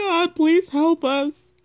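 play-acted high, slow, weepy, tearful crying plea. Retelling a woman crying in a chair with the man: imitating a deep crying voice. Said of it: "very deep voice when they start crying".

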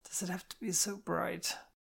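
soft, slightly high mumble under the breath. A hungover woman stirring awake in the morning, muttered. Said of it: "Kitty muttered".

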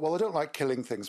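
ordinary delivery

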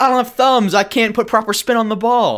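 high, loud, squealing pig voice. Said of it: "and he goes".

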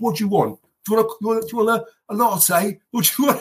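put-on brash man voice. Retelling how a man serving coffee talked to him, mock-brash retelling. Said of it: "very, very brash".

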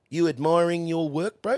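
put-on high, teasing old Kiwi bloke's accent.

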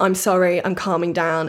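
ordinary talk

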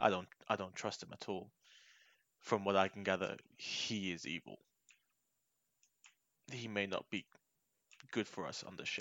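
hushed, very quiet whisper. Speaking in character, quietly warning a crewmate about a stranger: whispering. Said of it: "I whisper in, in his ear".

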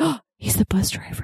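breathy, stunned whisper of realization. Speaker quoting a companion's reaction while watching a movie, retelling a whisper. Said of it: "He legit whispered".

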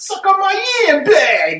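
put-on Italian accent. Saying the drinking word after being told it needs an italian accent: italian accent. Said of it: "say it with, like, an Italian accent".

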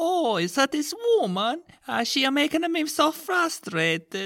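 very high, over-the-top, laid-on fake Italian accent. Playing a short client introducing himself to the therapist: highly offensive Italian accent as Mario. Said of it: "with a highly offensive Italian accent".

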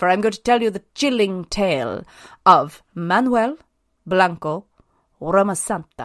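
put-on Spanish accent, storyteller delivery. Opening a story for the other hosts, saying the name in a Spanish accent. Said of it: "Excellent accent there".

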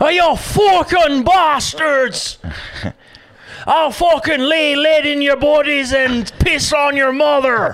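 put-on Irish accent in a very high pitch. Trying out an accent for the others in the room: attempted irish accent. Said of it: "That's my Scottish or Irish?".

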